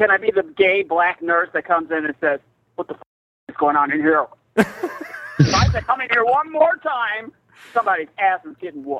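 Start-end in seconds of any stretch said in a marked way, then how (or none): 2.7-9.0 put-on butch, tough voice.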